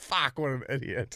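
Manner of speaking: fed-up, disgusted, self-scolding tone. Retelling how a friend judged his own tattoo: imitating someone saying it in disgust. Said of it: "shake his head in disgust and go".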